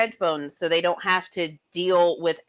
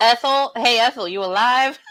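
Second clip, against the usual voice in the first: loud, high calling out; 5 semitones higher, 4 dB louder than usual. Showing how to wake an elderly person who sleeps hard, speaker shouts loudly. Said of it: "Sometimes you gotta be loud though".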